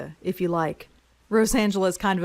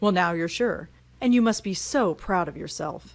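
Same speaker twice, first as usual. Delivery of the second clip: mocking, sarcastic, put-down tone. Voicing a game character's chosen sarcastic reply, sarcastic. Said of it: "We're gonna go sarcastic".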